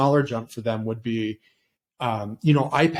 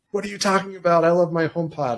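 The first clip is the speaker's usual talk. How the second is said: mock excited fan screaming, pitched up; 5 semitones higher than usual. Imitating an imagined Apple viewer reacting to the talk: imitating a screaming viewer. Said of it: "they're, like, screaming at me".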